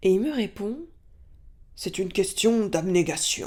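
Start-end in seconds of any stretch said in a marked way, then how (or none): 1.8-3.5 rough, heavy, big gravelly voice. Retelling Lucien's reply to the speaker's question: imitating Lucien's big gravelly voice. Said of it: "il parle comme ça".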